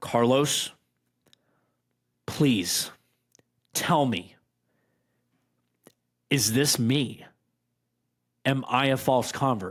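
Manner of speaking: put-on, slow, tearful pleading through crying. Retelling a phone call to a friend, imitating own past crying. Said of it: "And I'm starting to cry".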